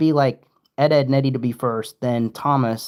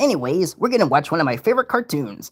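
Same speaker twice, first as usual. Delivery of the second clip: cartoon pirate voice, faster; 4 semitones higher than usual. Asked for an impression, speaker does a Patchy the Pirate voice. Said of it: "Can you do an impression of Patchy and Potty?".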